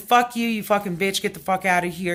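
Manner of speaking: usual speaking voice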